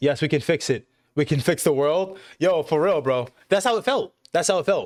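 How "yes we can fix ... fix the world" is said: usual speaking voice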